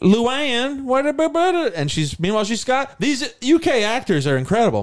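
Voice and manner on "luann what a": put-on super Southern accent, higher. Recalling an actress's role in a film, imitating Kelly Macdonald's super Southern accent. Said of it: "a super Southern accent".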